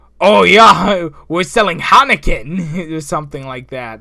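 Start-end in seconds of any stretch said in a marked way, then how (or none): 0.2-2.9 put-on Scottish-accented pig voice, higher and louder. Retelling own lines as an anthropomorphic pig man: scottish accent pig man. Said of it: "have, like, a Scottish accent".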